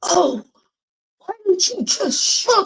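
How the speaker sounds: shrill, top-of-the-lungs scream, pitched very high. Retelling a moment of snapping at a driver: retelling a scream. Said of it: "I screamed at him at the top of my lungs".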